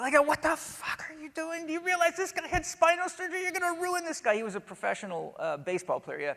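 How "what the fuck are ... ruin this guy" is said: put-on, very high, enraged, furious screaming tirade. Retelling how a surgeon called on the phone: imitating someone screaming. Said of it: "He was screaming at me so loud".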